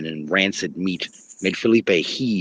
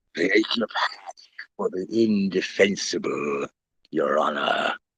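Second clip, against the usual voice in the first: thick, wet, phlegmy ghoul voice. Narrator voicing the ghoul beside Felipe in a courtroom, thick, wet, phlegmy voice. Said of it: "his voice thick, wet, and phlegmy".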